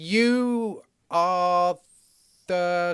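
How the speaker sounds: hesitant, halting delivery.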